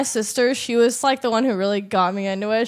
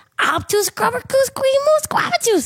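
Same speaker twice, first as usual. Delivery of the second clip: very high-pitched cartoon character voice; 14 semitones higher than usual. Showing the others a Timmy Turner impression. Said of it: "Timmy Turner".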